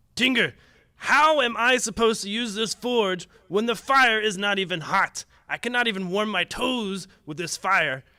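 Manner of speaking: angry dwarf voice hollering, high, booming, very loud. Game narrator voices the dwarf yelling at Tinger the halfling: dwarf yelling. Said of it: "the dwarf just starts yelling at him".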